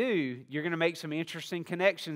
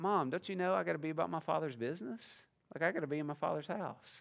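plain, soft, matter-of-fact delivery; 6 dB quieter than usual. Retelling a son's reply to his mother, mock matter-of-fact reply. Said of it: "he's just very matter-of-fact".

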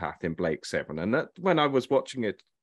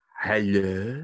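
strange fake French accent. Retelling how Jan answered a mobile at a dinner party: odd French accent. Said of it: "in a really odd French accent".

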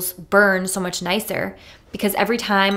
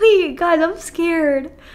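nervous laughing while talking, higher pitched; 9 semitones higher, 4 dB louder than usual. Telling listeners she feels scared and unreal: nervous laughing while talking. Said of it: "I know I'm laughing".

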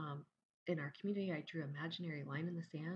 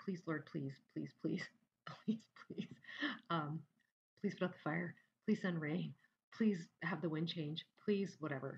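play-acted, imploring, repetitive begging. Retelling own prayers during a fire: imitating own begging prayer. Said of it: "my prayers sounded a lot like what I would call begging".

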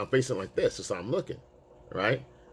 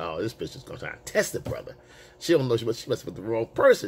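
normal talking voice

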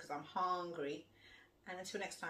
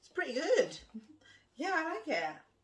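very loud, high talk, chewing with mouth full; 10 semitones higher, 9 dB louder than usual. Food show host tasting a dish on camera, talking with mouth full. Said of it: "shouldn't talk with your mouth full".

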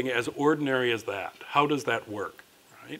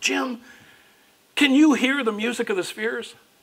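mock thrilled and eager, very high-pitched, excited; 11 semitones higher, 4 dB louder than usual. Retelling what Bill said to Dr. Lang, retelling an excited question. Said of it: "so excited".

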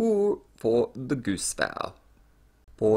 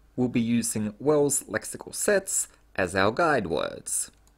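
ordinary talk

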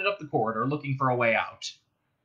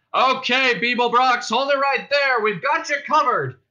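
very high-pitched, shrill, loud bullhorn-style call; 10 semitones higher, 5 dB louder than usual. Police call out to a man they have cornered: through a bullhorn. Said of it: "A voice on a bullhorn said".

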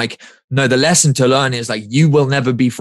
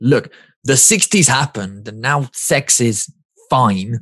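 put-on grudging, sour, bitter, resentful tone. Quoting a character from a TV comedy, the speaker gives a mock-bitter Peep Show quote. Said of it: "he says it really bitterly".

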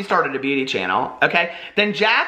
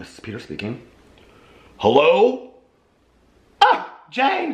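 swooping, put-on disguised voice. Answering a House of Drama phone call from a caller, in a disguised voice. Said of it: "I've had to be disguising my voice all day long".

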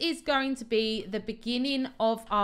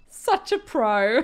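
cracking up, laughing through the words; 4 dB louder than usual. Streamer talking to viewers about their farm, laughing while saying it. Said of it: "I can't even say that without laughing".

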